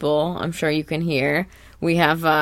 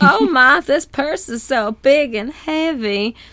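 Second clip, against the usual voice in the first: cartoon voice, southern accent, pitched up high; 9 semitones higher, 3 dB louder than usual. Describing a cartoon scene, the speaker quotes SpongeBob: SpongeBob in a southern accent. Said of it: "in the southern accent".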